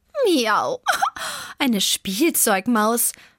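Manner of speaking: teasing, scoffing, mocking sing-song taunt. Zelda answers her grumbling friend Vivaldi, mocking. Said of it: "spottete Zelda".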